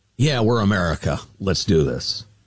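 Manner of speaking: ordinary talk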